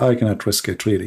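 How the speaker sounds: ordinary delivery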